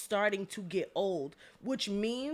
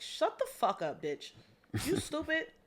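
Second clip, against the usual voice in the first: put-on street voice delivery, pitched up; 5 semitones higher than usual. Saying what he would have told her to shut her up: put-on street voice.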